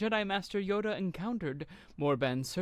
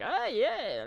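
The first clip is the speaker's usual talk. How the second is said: dopey, derpy, pitched-up goofy character voice; 6 semitones higher, 3 dB louder than usual. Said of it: "he's very derpy and like".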